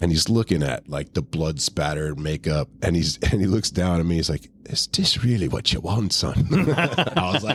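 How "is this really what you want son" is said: put-on, thick, heavy brogue accent. Telling a birthday-album story, quoting the man who bought it, thick brogue. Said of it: "he's got kind of got a thick brogue".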